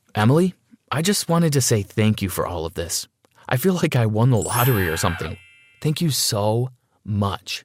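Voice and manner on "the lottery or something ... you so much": ordinary delivery, nothing marked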